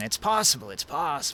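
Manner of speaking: put-on aged dwarf voice. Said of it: "says the old dwarf".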